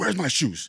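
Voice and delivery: put-on very high, fired-up, excited little kid voice. Retelling how an eager nephew rushed everyone out: imitating a fired-up nephew. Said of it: "fired up".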